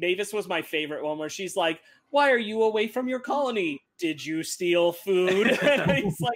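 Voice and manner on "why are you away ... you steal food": put-on condescending character voice. Recapping a show, acting out Mavis questioning him, imitating Mavis's condescending voice. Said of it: "Her condescending voice".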